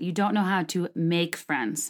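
"make" hit hard and said slowly. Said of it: "make in all caps, italics".

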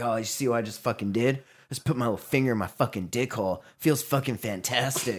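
crude delivery. Retelling how a podcast guest talked, imitating the Dick Hole Guy. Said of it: "it was the way he said it".

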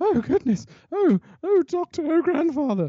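puffing a bit, breathless, very high-pitched. Quoting Carol Ann Ford in the same scene: imitating Carol Ann Ford puffing. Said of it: "is puffing a bit".

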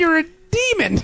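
freaked-out scream.

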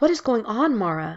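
imploring, pleading, begging tone. Jill rushes over to her crying girlfriend mara, pleading softly. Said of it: "she pleaded softly".

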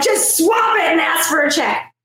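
acted, high, mild yell. Retelling what was screamed at the television: imitating own screaming. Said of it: "I'm screaming at my television".

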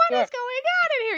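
mock, very high, frantic banshee-like maniac screech. Retelling a yell at home with the windows open: imitating own past maniac yelling. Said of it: "screaming like a banshee".

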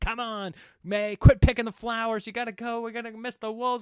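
high, urgent, hurrying yell. Recounting a rushed hike to see wolves, the speaker re-enacts yelling at a companion. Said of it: "I'm yelling like".

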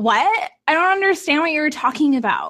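high-pitched put-on Valley Girl voice. Retelling own blonde moments in front of family: valley girl voice. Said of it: "I'll turn into a Valley Girl and be like".

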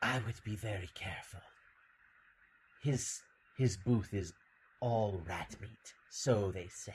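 sultry, soft, little purring cat voice. Narrating a tabletop game, voicing a catfolk woman behind the players; sultry purring voice. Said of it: "you hear a sultry little purring voice behind you".

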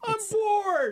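put-on child-like voice. Showing the phrase kids say six times a day, like a seven-year-old. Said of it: "channel your inner 7-year-old".

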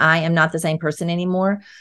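ordinary delivery

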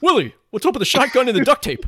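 squeaky, very high-pitched alien puppet voice. A speaker shows off his best impression, talking to Willie, ALF impression. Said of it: "It's my best impression".

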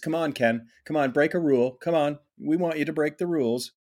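put-on wheedling, coaxing, tempting voice. Voicing the rules as they tempt the listener: put-on tempting voice. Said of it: "tempting me".

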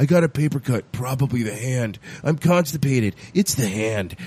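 mimicked low voice. Imitating a show character who keeps blaming the hand, talking really low. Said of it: "he's talking really low".

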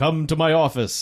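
deep, booming godlike voice. Retelling a scene where a voice on the microphone speaks: Christopher Lee voice of God. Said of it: "sounds like the voice of God".

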